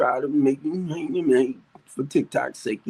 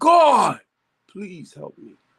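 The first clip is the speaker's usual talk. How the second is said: loud mock yell with each word stretched out; 4 semitones higher, 5 dB louder than usual. Retelling a desperate cry to God: retelling a yell. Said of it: "And I yelled out".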